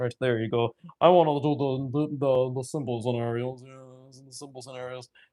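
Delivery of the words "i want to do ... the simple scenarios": deliberately deepened, put-on macho manly voice. Explaining simple design scenarios, the speaker switches into a deep manly voice. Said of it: "I need to use my deep, manly, my manly Viggy fabbing voice".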